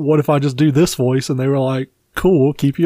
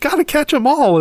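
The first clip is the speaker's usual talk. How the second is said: very high-pitched cartoon-style character voice; 13 semitones higher than usual. Imagining the voice actress saying the catchphrase to a listener, in an Ash Ketchum voice. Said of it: "in the Ash Ketchum voice".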